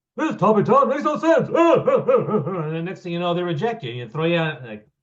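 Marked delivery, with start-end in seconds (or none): 0.2-1.5 very high-pitched, loud voice. Imitating a judge rejecting a talk topic: Statler and Waldorf impression. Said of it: "that was my Statler Waldorf impression".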